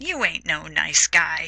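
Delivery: ordinary talk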